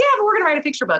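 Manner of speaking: high, fast, insistent and excited.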